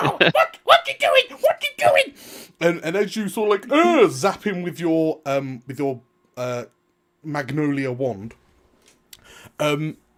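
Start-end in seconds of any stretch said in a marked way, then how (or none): 0.0-2.1 very high, loud little goblin skeleton voice. Describing throwing a skin on a goblin skeleton, which then speaks: goblin skeleton voice. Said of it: "the goblin skeleton's just like".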